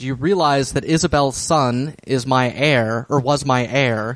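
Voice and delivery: ordinary talk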